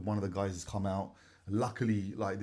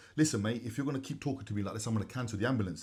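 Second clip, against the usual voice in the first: ordinary talk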